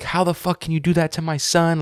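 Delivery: acted, high, anguished, pained outcry. Retelling a victim's father's words to the man in court: imitating a pained emotional outburst. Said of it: "you can hear the pain in the man's voice".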